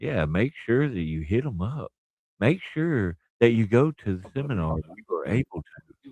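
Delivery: silky, buttery smooth, polished announcer voice. Telling listeners to attend a seminar before the show: buttery smooth voice. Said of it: "you hear how buttery smooth my voice sounds when I talk like that".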